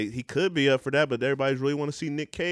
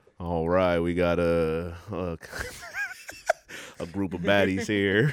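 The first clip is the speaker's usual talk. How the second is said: imitated Southern accent; 8 semitones lower than usual. Pitching a host voice for Camp Baddies: Southern-accent Keanu impression. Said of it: "Here go my Southern Keanu".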